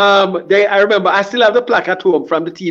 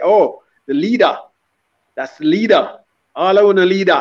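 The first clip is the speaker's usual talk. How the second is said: put-on light, lilting Swedish Jamaican accent. Recalling how a lady in Sweden singled out the speaker, Swedish Jamaican accent. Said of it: "In her little um Swedish Jamaican accent".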